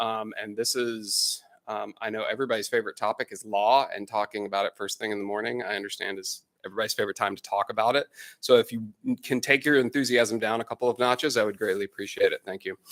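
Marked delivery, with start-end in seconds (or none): none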